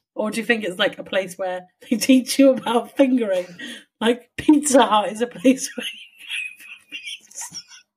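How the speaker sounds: talking through helpless laughter, pitch swooping. Joking about a surname with another speaker: laughing hard while talking. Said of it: "it's got me madly laughing".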